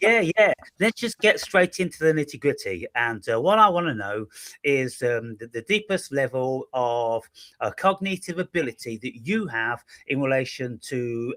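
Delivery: ordinary talk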